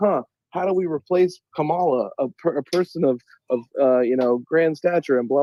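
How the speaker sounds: usual speaking voice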